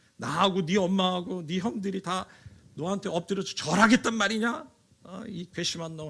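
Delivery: reproving tone.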